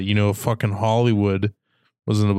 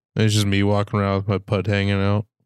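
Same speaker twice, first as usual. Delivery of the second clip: usual speaking voice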